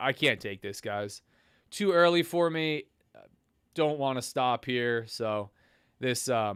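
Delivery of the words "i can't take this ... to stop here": defeated voice, sounding already beaten. Watching the market five minutes after it opens: defeated voice. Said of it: "you can hear the defeat in my voice already".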